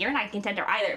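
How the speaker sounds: usual speaking voice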